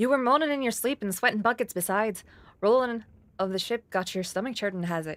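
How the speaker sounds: put-on Irish accent. Voice acting a character's lines, in an Irish accent. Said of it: "I don't know why he's Irish".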